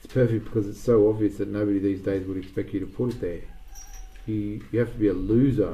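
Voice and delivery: ordinary talk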